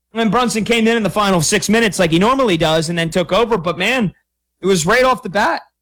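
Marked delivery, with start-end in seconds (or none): 4.6-5.6 voice cracking with excitement. Basketball commentator describing a second-quarter run, voice cracking. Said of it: "A little voice crack there".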